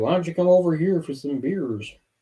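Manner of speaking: fake Upper Midwest accent. Praising an actor's accent, then imitating it: Evan Peters' Wisconsin accent. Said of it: "his Wisconsin accent is fantastic".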